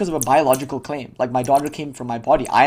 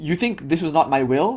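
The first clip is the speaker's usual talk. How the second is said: plain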